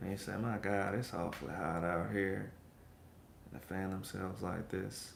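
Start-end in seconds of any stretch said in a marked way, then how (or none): 0.4-2.5 very slow, unhurried, drawn-out words. The speaker imitates how people talk where he is from: imitating slow talk. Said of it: "They talk real slow".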